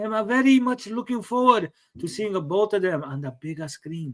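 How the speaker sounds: put-on Japanese accent. Reading out a post, imitating Miyamoto: put-on Japanese-accented Miyamoto voice.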